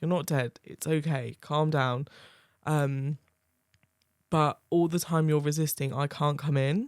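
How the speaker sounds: ordinary delivery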